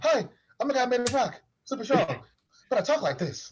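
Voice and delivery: high-pitched put-on voice. Retelling how a very tall, strong man talks: imitating a high-pitched voice. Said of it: "voice high pitch?".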